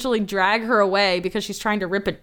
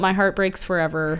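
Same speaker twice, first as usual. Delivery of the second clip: ordinary talk, nothing marked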